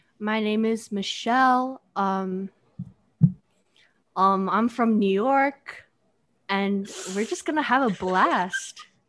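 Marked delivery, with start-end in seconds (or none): 2.0-5.9 voice breaking, cracking on "New York". Introducing herself on a podcast's first episode, voice cracking on New York. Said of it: "How did your voice crack when you said New York?".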